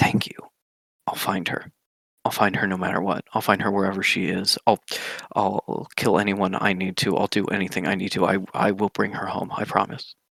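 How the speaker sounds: voiced stage whisper, close and intimate. A game narrator voices a woman holding the player close, speaking in their ear: half-whispering. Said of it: "she whispers um, in your ear".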